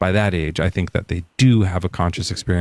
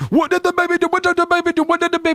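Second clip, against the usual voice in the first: mock yelling, higher. Mimicking another speaker's repeated question back at them: imitating someone yelling. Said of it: "You're yelling at me".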